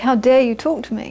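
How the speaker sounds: ordinary talk, nothing marked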